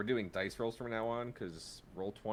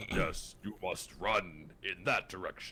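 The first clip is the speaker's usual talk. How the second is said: deep, slow, unhurried character voice; 3 semitones lower, 4 dB louder than usual. Voicing the character Juicy F telling the player which way to run: deep voice for Juicy F. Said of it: "Juicy F has a very deep voice".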